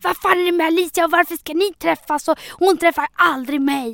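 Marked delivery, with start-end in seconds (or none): 0.0-2.3 acted-out screaming and yelling. The speaker recalls once screaming at the listener, retelling a scream. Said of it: "när jag skrek ju".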